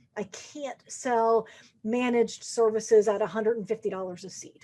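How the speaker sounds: ordinary delivery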